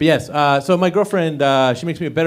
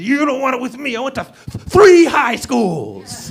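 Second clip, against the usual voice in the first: wired, off-kilter, strange, pitched-up tough voice; 8 semitones higher than usual. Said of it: "sounding so strange".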